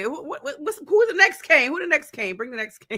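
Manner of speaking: fast, excited speech, stumbling over the words. Sharing the Hurricanes excitement with everyone listening, excited. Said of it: "I'm so excited".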